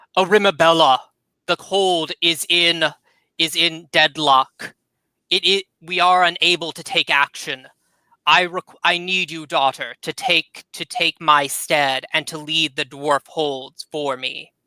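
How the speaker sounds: growling, crackling grumble. Narrator voicing Gildoon speaking to his daughter, growling crackling voice. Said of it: "he kind of speaks in a uh, in a uh, grumble in a kind of growling, uh, crackling voice".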